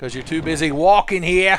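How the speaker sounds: mocking New Jersey accent. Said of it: "That's my bad Jersey impression".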